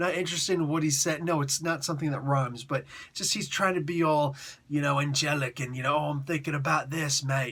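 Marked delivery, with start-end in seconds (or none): 5.9-7.5 put-on Australian-sounding accent. Mocking a comic narrator's musings in a bad Australian-sounding accent. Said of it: "now I sound like an Australian".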